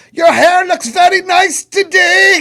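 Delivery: put-on angry shout in German. Describing a sketch of two german guys: imitating a german shouting nice things. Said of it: "Just two German guys just screaming nice things".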